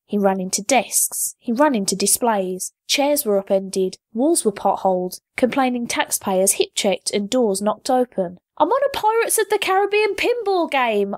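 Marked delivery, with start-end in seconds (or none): 8.6-11.1 very high, shrill, loud yell. Narrator reading a character charging through a library on another's back: yelling to everyone. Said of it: "Aisha yelled to everyone and no one at once".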